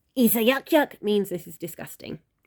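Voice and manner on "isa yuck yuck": high, pitched-up, put-on storybook dragon voice. Reading a dragon's words aloud from a book: Toothless voice. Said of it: "that was my toothless voice there".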